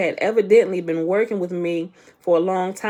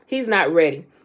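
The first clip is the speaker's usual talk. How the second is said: ordinary delivery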